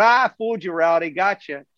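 put-on teasing taunt spoken through laughter. Retelling how a swimmer fooled the interviewers: imitating Melanie Margalis laughing. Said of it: "she started bawling, laughing, going".

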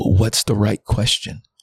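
broken, tearful, giving-in voice near tears. Retelling breaking down before god at a gravesite: retelling own past breaking down. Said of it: "And I just broke and I said".

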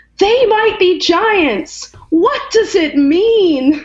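very high, drawn-out, stretched hollered shout. Retelling a stranger at a stoplight calling out: imitating a man shouting. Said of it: "he shouted out the window".

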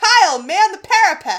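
loud, deliberate, drawn-out high yell. Reading out a script scene where a character orders kyle: acting out a yell. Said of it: "She yells".

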